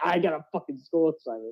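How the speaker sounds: heated, angry complaining tone. Repeating the other person's complaint back to them, mock-angry. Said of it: "I heard the anger in your voice when you".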